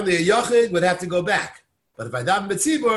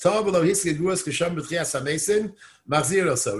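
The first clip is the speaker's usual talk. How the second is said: usual speaking voice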